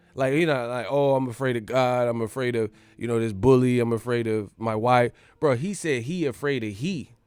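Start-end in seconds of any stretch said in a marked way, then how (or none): none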